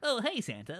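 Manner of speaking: high, servile, eager-to-please subservient tone. Retelling how the boss elf greets santa: imitating a subservient voice. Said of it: "subservient voice".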